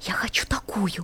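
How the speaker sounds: whispering. Narrator reading little Zhorzhik's line: whispered. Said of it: "Жоржик раскрыл ротик и прошептал".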